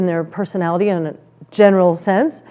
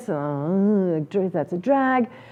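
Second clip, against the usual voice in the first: very quiet, very slow, annoyed, with downturned pitch; 10 dB quieter than usual. Speaker demonstrating to listeners how changing one word changes a phrase: annoyed. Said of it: "like annoyance".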